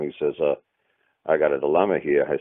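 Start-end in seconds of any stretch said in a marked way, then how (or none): 1.3-2.3 put-on Jamaican accent. Retelling a phone call from Malcolm, quoting him in a Jamaican accent. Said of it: "he had a Jamaican accent".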